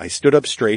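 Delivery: ordinary delivery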